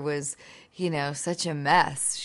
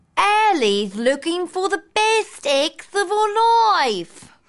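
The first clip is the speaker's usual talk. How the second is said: put-on British accent, very high and very loud; 10 dB louder than usual. Answering an interviewer's request to show the film's accent: put-on british accent. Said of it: "can you give us a bit of a blast of your British accent?".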